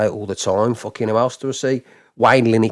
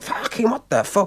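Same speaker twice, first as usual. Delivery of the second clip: put-on high-pitched, fuming, furious and baffled outburst; 10 semitones higher than usual. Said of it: "I was fuming".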